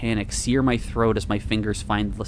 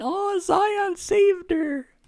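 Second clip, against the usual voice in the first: tiny, very high, drawn-out squeaky voice. Narrator reads a small familiar voice from behind her: small squeaky voice. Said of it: "A small, familiar voice squeaks out".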